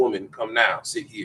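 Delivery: curt, very direct, blunt, brutish tone. Showing how a direct, brutish language would sound in English: blunt brutish commands. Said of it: "a brutish language".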